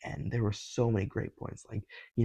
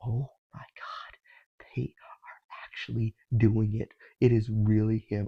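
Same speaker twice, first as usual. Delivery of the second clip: thrilled, slow, drawn-out, savoring each word; 4 dB louder than usual. Retelling sitting in the theater seeing the twist: retelling own excited reaction. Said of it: "I was so excited".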